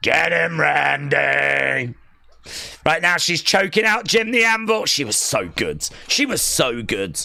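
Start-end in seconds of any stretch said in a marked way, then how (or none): 0.0-1.9 rough, creaky, raspy urging with one word drawn out. Repeating how Sherri shouted to the camera: imitating Sherri's line to camera. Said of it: "Why did she say that like that to the camera?".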